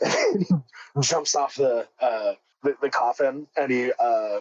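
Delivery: ordinary delivery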